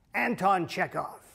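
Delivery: put-on slow, gravelly old actor voice.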